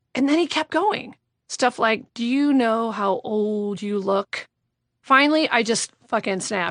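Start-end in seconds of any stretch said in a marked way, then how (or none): 2.1-4.4 put-on drunken, boozy whisper. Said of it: "start whispering, like, boozy, stupid, yammering".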